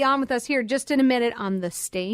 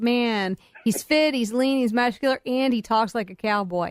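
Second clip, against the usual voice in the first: ordinary talk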